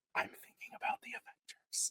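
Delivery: very quiet, barely audible whisper. Retelling whispering in her ear during the wedding ceremony: retelling a whisper. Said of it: "lean in and whisper in her ear".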